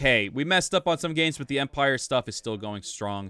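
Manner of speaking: usual speaking voice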